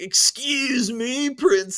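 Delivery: high surfer-dude voice. Speaker imagines a goofy movie version of Link he would dislike, surfer-dude Link voice. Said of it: "almost like a surfer dude who's like".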